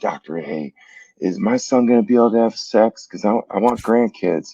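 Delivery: whisper. Retelling a mother quietly asking the doctor a question: imitating mom whispering.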